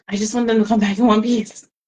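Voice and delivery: fast, rushed, frantic panicked pleading. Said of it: "I was just in a massive panic".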